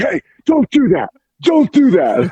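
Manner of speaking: mock very high, slow, swooping scolding yell. Retelling scolding a young competitor after a match: retelling yelling at someone. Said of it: "yelling at him like a child".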